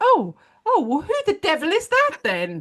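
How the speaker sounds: very high, swooping, bewildered and confused voice. Imagining the teacher answering the child: imitating a confused teacher. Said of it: "And she's like".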